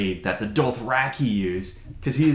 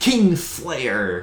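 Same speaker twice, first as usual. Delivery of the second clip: put-on heavy lisp, louder; 3 semitones higher, 4 dB louder than usual. Imitating a book character speaking to a captive: imitating Vargo Hoat's heavy lisp. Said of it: "he spells out the lisp".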